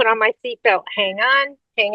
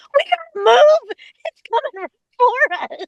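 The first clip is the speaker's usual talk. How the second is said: very high-pitched, shrill yell; 13 semitones higher than usual. Retelling a warning about a barge coming up behind: imitating own yell. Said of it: "I'm yelling at Clark".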